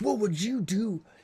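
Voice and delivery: acted-out high-pitched screaming, right up close. Retelling an inmate screaming while being booked in: imitating someone screaming. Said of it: "he's screaming in my face".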